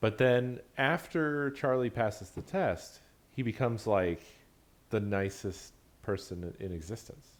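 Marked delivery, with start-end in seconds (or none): none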